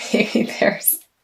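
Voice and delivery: breathy words spoken through laughter. Reading cards for someone and laughing at a remark: laughing while talking. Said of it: "sorry for laughing".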